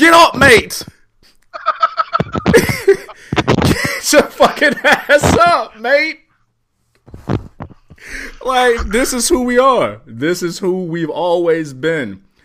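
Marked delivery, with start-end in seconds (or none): 0.0-6.2 put-on high, slow yell with Australian accent.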